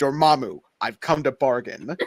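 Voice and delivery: put-on English accent. Talking about doing English accents; Benedict Cumberbatch impression. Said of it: "I can do that voice specifically".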